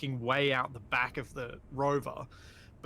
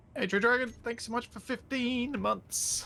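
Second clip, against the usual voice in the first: voice breaks in "fifteen"; 9 semitones higher than usual. Thanking someone by name for fifteen months, voice cracking. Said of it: "I don't know why my voice cracked then".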